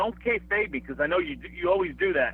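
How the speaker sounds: ordinary talk, nothing marked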